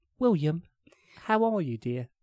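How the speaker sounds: put-on British accent. Retelling how Lucy, a pet cocker spaniel, talked: Lucy's British accent. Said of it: "she had a British accent".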